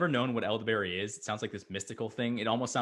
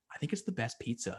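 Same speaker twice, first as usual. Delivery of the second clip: whispered, much quieter; 6 dB quieter than usual. Giving a shout-out, whispering. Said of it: "I'm gonna whisper that".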